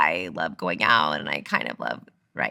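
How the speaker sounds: very low, creaking vocal fry throughout. Explaining a habit in a woman's voice, the speaker demonstrates it: vocal fry. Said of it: "vocal fry is when you're like".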